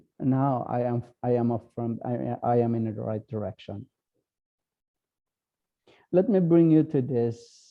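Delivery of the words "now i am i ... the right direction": ordinary talk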